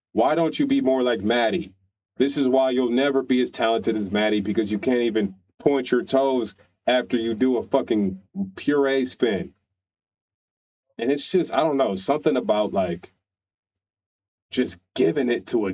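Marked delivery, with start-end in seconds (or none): none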